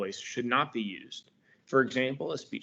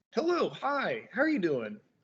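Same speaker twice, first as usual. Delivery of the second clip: excited, raised voice, high and swooping pitch; 8 semitones higher than usual. Demonstrating how tone of voice changes a greeting, excited, raised voice. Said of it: "your voice is raised a little bit, you have a little more excited, you say it kinda faster".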